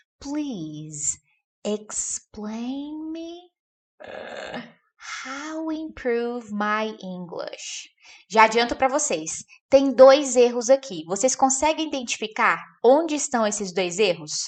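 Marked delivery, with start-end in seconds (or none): 0.2-7.9 hushed, soft, very slow delivery. Saying a flawed english example so listeners won't memorize it, quietly. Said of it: "eu vou falar baixinho pra você não decorar isso aqui".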